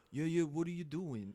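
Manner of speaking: clumsy put-on New York accent, old New Yorker voice. Doing a guessing-game impression of an old New York actor: bad impression of an old New Yorker. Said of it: "I'm just gonna do the impression of him".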